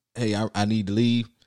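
normal talking voice

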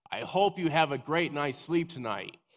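loud, high-pitched shout. Retelling what gets screamed at mean coworkers: retelling a loud shout. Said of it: "I usually say something positive in a loud voice".

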